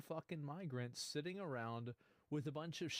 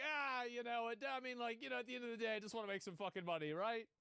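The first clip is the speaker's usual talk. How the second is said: higher, rambling, hedging voice; 8 semitones higher than usual. Imitating other sellers who justify themselves: imitating the other sellers. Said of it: "the other people there are like".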